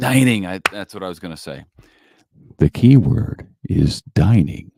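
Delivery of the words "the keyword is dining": very slow, loud, grand game-show host delivery. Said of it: "I sound like a professional from a game show?".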